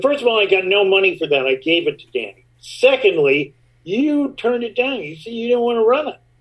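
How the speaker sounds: snapping back angrily. Retelling snapping at someone who asked about the piece: retelling snapping at someone. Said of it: "And I just snapped at him".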